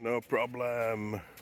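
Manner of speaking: slow, poorly done, failed Jamaican accent attempt.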